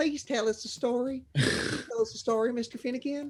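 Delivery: put-on high, pleading child voice with southern accent. Voicing little halfling children asking mister finnegan for a story: halfling child, southern accent. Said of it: "or with a southern accent".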